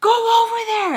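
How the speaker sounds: put-on angry voice, very high, over drawn out. Retelling someone ordering her away: imitating a mad order.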